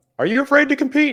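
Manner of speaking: high-pitched, loud yelling. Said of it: "make sure you yell out".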